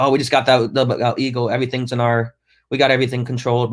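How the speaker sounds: plain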